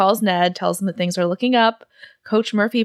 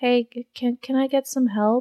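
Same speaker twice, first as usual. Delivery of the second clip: put-on teeny tiny, quiet, hushed little voice; 4 semitones higher, 3 dB quieter than usual. Retelling a scene, voicing a boy duct-taped to a toilet calling for help in [name]'s teeny tiny quiet voice. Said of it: "a very teeny tiny, quiet little voice".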